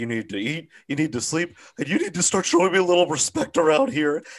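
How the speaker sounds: mock worked-up rant, near tears. Quoting a film line on a podcast: imitating John Goodman close to tears. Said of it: "he sounds like he's about to start fucking crying".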